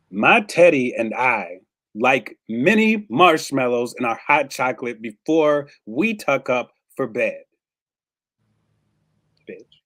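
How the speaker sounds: loud, nastiest, meanest voice. Actor asked to perform a scene makes the face: meanest voice. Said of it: "Meanest voice".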